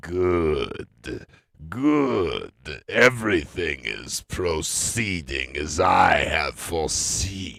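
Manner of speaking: each "good" stretched, slow and loud. Imagining a politician's office recording: Star Wars Emperor voice. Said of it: "the recording would have sounded something like this".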